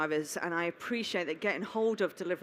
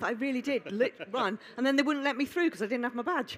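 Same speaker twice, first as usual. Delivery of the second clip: out of breath, breathless, fast and pitched up; 6 semitones higher than usual. Introducing herself to a group after running up from Cardiff, out of breath. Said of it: "I'm still out of breath".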